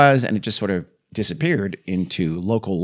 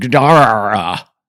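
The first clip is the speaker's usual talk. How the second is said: Gadara, middle syllable stressed, low and mean; 3 semitones higher, 9 dB louder than usual. Quoting someone describing a sound he heard: stress on second syllable of Gadara. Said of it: "with the accent on the second syllable. I hope I achieved that".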